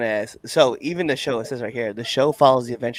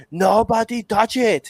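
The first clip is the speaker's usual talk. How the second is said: very high, barking tough-guy voice; 10 semitones higher, 4 dB louder than usual. Retelling a cartoon Doberman's line in an Arnold Schwarzenegger voice. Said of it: "he sounded like Arnold Schwarzenegger".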